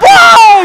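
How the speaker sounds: very high, loud, shrill yell with voice cracking. Calling a basketball game as a fast break ends in a block: voice cracking. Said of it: "voice crack on that one".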